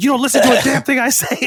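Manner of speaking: very high, shrill, scolding yell. Retelling his dad yelling at their dog at night, imitating dad yelling. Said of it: "he's yelling at my dog".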